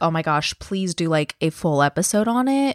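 ordinary talk

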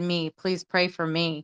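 acted-out, put-on crying plea. Retelling her own request in a prayer chat; retelling a crying plea. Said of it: "I just was crying".

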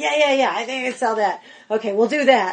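put-on New York accent and manner. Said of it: "she's real New York".

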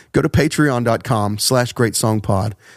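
sober, low, serious public-radio announcer voice. Pitching a Patreon to listeners for a joke: voice brought down low. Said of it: "I brought my voice down low".

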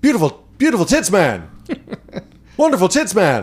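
high character voice, pitch swooping up and around. Asked to just do the voice, Hunter S. Thompson voice. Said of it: "just do the voice".

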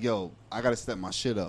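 ordinary delivery

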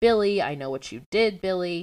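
ordinary talk, nothing marked

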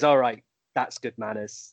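put-on muttering under the breath. Retelling a press conference, quoting a phone-ringing rebuke: muttering under breath as Roy Keane. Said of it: "just sort of under his breath goes".

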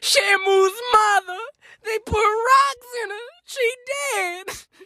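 very high, slow, tearful sobbing wail. Retelling what he said to the group, the speaker quotes him: imitating someone nearly crying. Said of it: "he's practically in tears and he goes".

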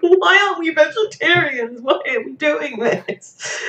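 high, slow tearful wail, near tears. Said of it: "me and Chloe almost burst into tears".

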